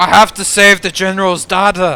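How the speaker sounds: cheesy, high, loud, belted action movie-hero delivery.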